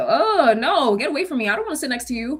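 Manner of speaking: playful, half-joking teasing tone. Speaker quotes a woman who looked at her, retelling a joking remark. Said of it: "She's saying it in a joking manner".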